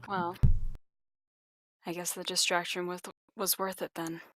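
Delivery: soft grumble under the breath, just audible. A player's character, dragging a body out, speaks to him muttering under her breath. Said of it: "She she mutters under her breath enough for him to hear".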